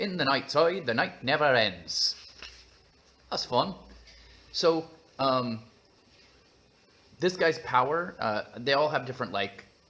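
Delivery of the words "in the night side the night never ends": put-on London Cockney storyteller voice. Reading a story's opening line aloud to the audience, in a Cockney accent. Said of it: "Cockney's fine. That's what I'm doing".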